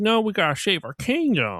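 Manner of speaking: put-on very high, swooping cartoon voice. Retelling a movie scene where two characters refuse to come along: characters' cartoon voice. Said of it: "just like that in that voice".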